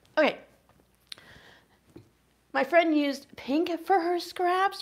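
tearful, near-crying voice. Speaker telling viewers she's having one of those weeks: through tears. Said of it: "We're just gonna ignore the tears".

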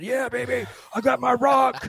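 play-acted super excited whoop, very high, very loud, drawn-out. Retelling how a man found something under a car seat: imitating someone super excited. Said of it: "got super excited".

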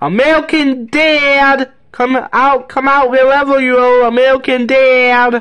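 acted cartoon father voice. Calling out to find American dad, yelling in a Griffin voice. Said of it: "With my Griffin voice".

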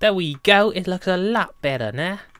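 slight cockney accent. Talking to viewers after fixing something on screen, slipping into a cockney accent. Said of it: "I turned kind of cockney then".

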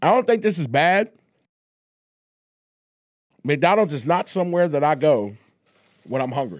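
speaking with food in mouth. Eating McDonald's with friends on camera, talking with food in mouth. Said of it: "I got food in my mouth".

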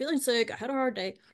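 ordinary talk

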